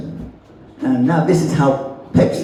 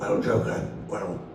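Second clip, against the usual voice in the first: low, gruff voice; 5 semitones lower, 10 dB quieter than usual. Doing a Batman impression: gruff Kevin Conroy Batman voice. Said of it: "he was more gruff".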